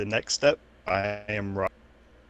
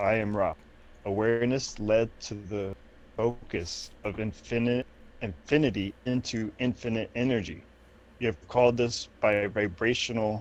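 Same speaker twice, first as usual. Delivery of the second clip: ordinary delivery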